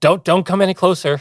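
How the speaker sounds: very high, frightened, panicky pleading tone. Narrating a story, the speaker voices a man: panicked voice. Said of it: "in a panicked voice goes".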